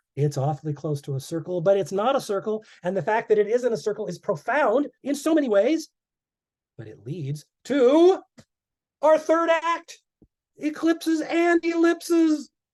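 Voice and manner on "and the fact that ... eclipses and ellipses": loud, fast, much higher-pitched delivery. A speaker getting excited while explaining eclipses, talking loud and fast. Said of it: "I'm talking loud and fast".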